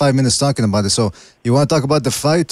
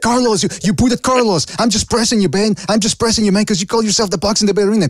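acted, frantic, high-pitched maniac screaming rant; 8 semitones higher than usual. Imagining a caller screaming on his cell phone at a truck stop: imitating someone screaming like a maniac. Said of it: "talking on his cell phone like a maniac, screaming".

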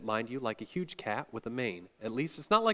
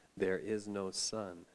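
grave, soft, deep, very slow voice; 5 semitones lower, 7 dB quieter than usual. The witch repeats the line to the four listeners in a softer and deeper voice. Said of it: "She repeated in a softer and deeper voice".

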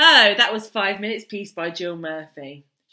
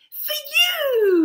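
very high, bright, glowing voice, "you" drawn out; 3 dB louder than usual. The little one brings Mrs. Large a trunk full of toys, beaming. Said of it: "he beamed".

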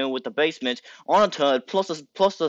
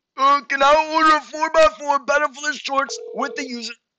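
high, cartoonish nerd voice. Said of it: "do the nerd emoji voice".

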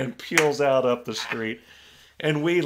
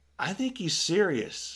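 very calm voice, higher and quieter; 4 semitones higher, 5 dB quieter than usual. Retelling how mom told a salesman to leave: imitating mom speaking very calmly. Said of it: "my mom very calmly said".

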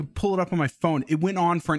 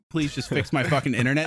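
ordinary talk

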